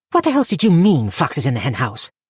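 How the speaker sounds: hurried, pressing whisper. Narrator reads a character's line to a companion while all eyes are on her: urgent whisper. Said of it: "in an urgent whisper".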